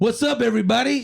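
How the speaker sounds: strained, pitched way up, forced hype. Called up by name, a guest greets everybody with a forced hype greeting. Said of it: "that was a little forced".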